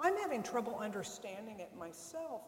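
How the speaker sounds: ordinary talk, nothing marked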